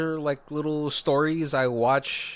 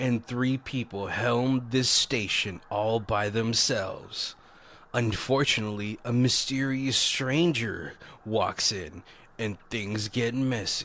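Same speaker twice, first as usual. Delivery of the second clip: put-on movie trailer narrator voice, lower; 4 semitones lower, 3 dB quieter than usual. Reading a made-up trailer for the movie: Mister Movie Phone trailer voice. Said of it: "Mister Movie Phone".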